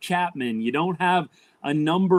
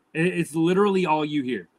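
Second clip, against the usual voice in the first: normal talking voice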